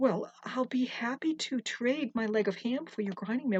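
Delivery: ordinary delivery, nothing marked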